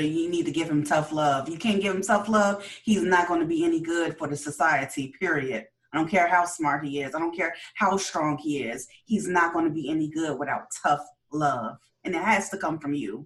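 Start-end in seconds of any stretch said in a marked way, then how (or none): none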